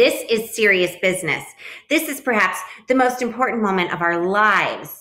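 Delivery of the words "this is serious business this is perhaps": ordinary delivery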